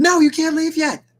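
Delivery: very high, shouted delivery. Voicing a character who won't let another leave: shouting in character.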